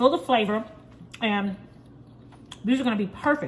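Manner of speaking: speaking with a mouth full of food. Cook tasting a meatball on camera for viewers, talking while chewing. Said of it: "Let me let me finish chewing".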